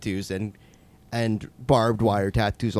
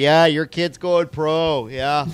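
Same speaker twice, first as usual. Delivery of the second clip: put-on sarcasm, higher; 6 semitones higher than usual. Acting out talking to other parents: mock sarcastic praise. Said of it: "Just be sarcastic".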